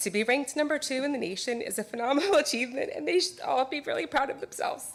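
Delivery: tearful, high-pitched crying voice. Honoring a high school team, the speaker breaks down: crying while speaking. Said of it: "I don't know why I'm crying".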